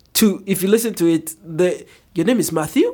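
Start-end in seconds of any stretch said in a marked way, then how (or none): 2.1-2.9 questioning, uncertain lilt climbing at the end on Matthew. Showing how a statement sounds unsure: uncertain rising inflection at end. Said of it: "there's an uncertainty to it".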